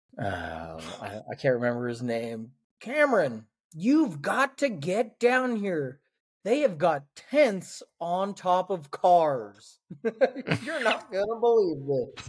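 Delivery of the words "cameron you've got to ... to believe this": high yelling, words stretched out. Retelling a woman on her phone calling her husband over: imitating a woman yelling on the phone. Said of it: "she's yelling at her husband".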